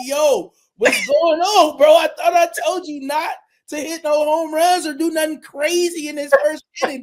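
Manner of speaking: loud, high-pitched yell, acted out. Retelling yelling at him as he comes back in: retelling a yell. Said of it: "I'm yelling at him like".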